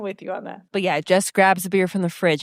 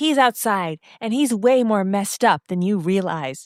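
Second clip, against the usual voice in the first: ordinary delivery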